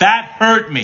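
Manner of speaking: loud, very high voice. Explaining tone of voice, the speaker repeats the same words: louder delivery. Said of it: "Same words, different volume".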